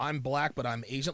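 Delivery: normal talking voice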